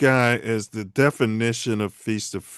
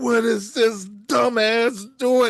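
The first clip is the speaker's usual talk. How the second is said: put-on very high-pitched shrieking scream; 11 semitones higher than usual. Recalling a player's play at the end of regulation, retelling own screaming. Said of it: "my wife would tell you I'm screaming".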